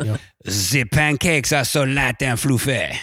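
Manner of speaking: English spoken with a put-on French accent. Advising a co-reader to just do french names in an accent: french accent. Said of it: "just do a French accent. Okay, like this".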